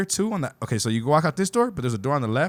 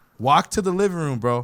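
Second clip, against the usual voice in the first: ordinary talk, nothing marked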